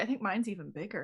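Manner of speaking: hushed, theatrical stage whisper. Playing a character in a tabletop game, speaking to a companion in a stage whisper. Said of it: "while still stage whispering".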